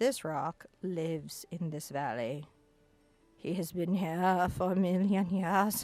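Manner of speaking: slow, silly, funny character voice. Painting highlights on rocks and speaking for a rock: funny voice. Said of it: "the funny voice does help".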